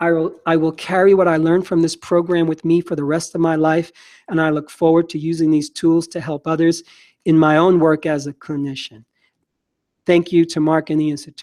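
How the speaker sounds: normal talking voice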